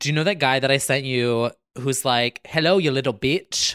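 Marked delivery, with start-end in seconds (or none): 2.4-3.7 really bad fake Australian or New Zealand accent. Asking about a TikTok guy she sent, imitating a really bad accent. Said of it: "really bad accent".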